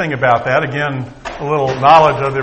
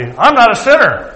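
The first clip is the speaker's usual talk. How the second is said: put-on high, drawn-out, haughty, superior tone; 8 semitones higher, 4 dB louder than usual. Retelling a preacher's story, quoting a woman who walked out, mock-haughty. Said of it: "said rather haughtily".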